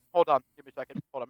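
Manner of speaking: speaking through a mouthful, chewing the words. Asking the others to wait a moment, eating while talking. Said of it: "I'm eating something".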